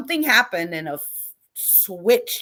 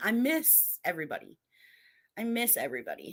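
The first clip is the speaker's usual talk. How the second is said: soft, heartfelt, slightly emotional tone; 8 dB quieter than usual. Saying how much the group is missed: a little emotional. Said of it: "I'm a little emotional right now".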